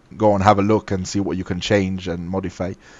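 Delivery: ordinary delivery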